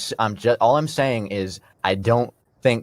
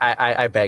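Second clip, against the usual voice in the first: normal talking voice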